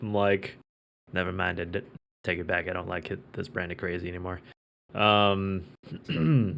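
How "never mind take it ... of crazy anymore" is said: muttering under the breath, quieter. Recounting what the speaker said to the group, muttering under breath. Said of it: "under my breath to the group".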